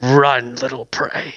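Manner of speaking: growling wolf voice. Voicing a wolf between growls: growling wolf voice. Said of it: "In between each growl".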